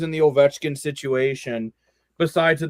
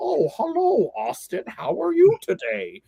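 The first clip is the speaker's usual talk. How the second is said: put-on Midwest accent, very high, swoopy, sing-song. Imagining a manager phoning a star player, Brad Treliving in Midwest accent. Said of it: "why I sound like I'm from the Midwest".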